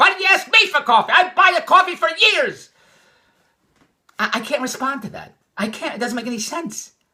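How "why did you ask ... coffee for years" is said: mock shrill, very high, loud hollering. Recounting getting coffee, then being hollered at in the car: retelling someone hollering. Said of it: "She started hollering at me".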